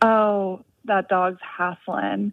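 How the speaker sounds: put-on Southern accent, very slow, very drawn out. Quoting what she used to say about a panting dog, in a Southern accent. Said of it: "in her Southern accent".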